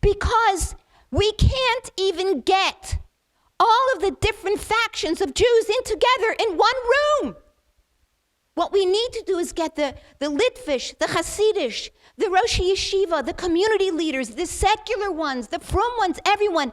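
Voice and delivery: high, sobbing, crying scream. Speaker retells what a rabbi said, imitating him screaming and crying. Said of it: "And the Ben Rav is screaming and crying".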